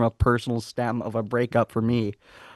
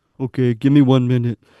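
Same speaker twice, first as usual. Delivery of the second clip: loud, dead level, one-note monotone; 6 dB louder than usual. Retelling a story, the speaker imitates a man who just came in: monotone imitation. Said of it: "he was always like very monotone. So I'll try and like imitate him".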